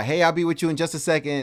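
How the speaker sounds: loud friendly yell. Retelling calling out to a waiting customer while busy: imitating own yell. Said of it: "I'm yelling at that guy".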